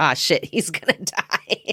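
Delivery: laughing through it. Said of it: "the old lady's like".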